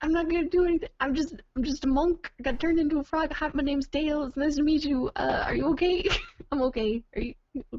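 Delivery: high, rambling, tumbling babbling chatter. A player voicing a monk turned into a frog, babbling at her as she waves her hands. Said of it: "Just like babbling at her".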